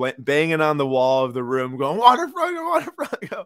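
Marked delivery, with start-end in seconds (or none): 2.0-3.4 acted-out, very high, wild, repeated screaming. Retelling own reaction in a hotel room, retelling own screaming. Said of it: "I'm screaming in this hotel room".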